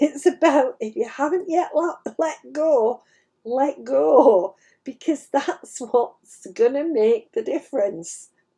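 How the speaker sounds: words broken up by laughter. Passing on a message about letting go, laughing while talking. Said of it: "Sorry, I'm laughing because".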